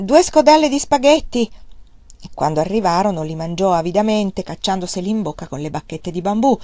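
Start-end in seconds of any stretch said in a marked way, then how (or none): 0.0-1.5 loud, shrill shout. A boy at a roadside eatery calls out to a seated customer, shouting. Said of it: "gli gridò".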